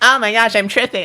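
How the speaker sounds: put-on very high, loud, squealing Valley Girl voice. Telling a made-up Harry Potter story, voicing Filch tripping: Filch in a Valley Girl voice. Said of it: "what's the Valley Girl voice again?".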